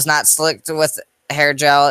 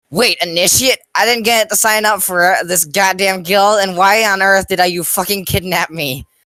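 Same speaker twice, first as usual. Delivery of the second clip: hot, angry, high-pitched voice; 6 semitones higher than usual. Reading a story aloud, a kidnapped character protests: shouting high and angry. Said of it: "Owen was shouting high and angry".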